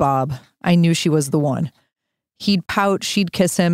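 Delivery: ordinary talk, nothing marked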